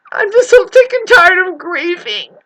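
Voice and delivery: very high, tearful, crying through the words. Explaining why they are crying, crying while talking. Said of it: "The reason why I'm crying".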